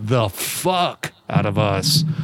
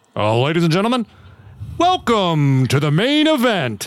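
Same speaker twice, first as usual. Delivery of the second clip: ring announcer voice, much higher; 6 semitones higher than usual. Imagining a woman ring announcer, trying the intro: ring announcer voice. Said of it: "I don't know a lot of women who do ring announcers".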